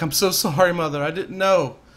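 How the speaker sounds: crying and bawling. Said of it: "she's crying and bawling her eyes out".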